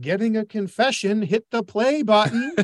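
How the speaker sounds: dry mocking sarcasm. Retelling an answer they wanted to give when asked why they were there, mock-sarcastic retort. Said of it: "And sarcastically".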